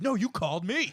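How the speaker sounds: heated, high-pitched, blaming tone. Retelling a prank call on two kids who just broke up, imitating a heated argument. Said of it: "they got in like a huge heated argument".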